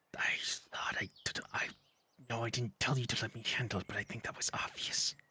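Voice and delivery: tiny, very small, barely audible whisper. A character turns his head away from those approaching, in a very small whisper. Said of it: "whisper in a very small voice".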